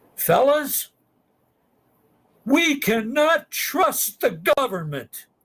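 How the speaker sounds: re-enacted screaming. Recounting waiting for a haircut, addressing the fellas, re-enacting a scream. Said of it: "and I scream".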